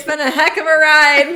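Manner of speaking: very loud, booming big-event announcer voice. Saying the podcast outro to listeners: like an announcer at the Super Bowl. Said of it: "you're at the Super Bowl".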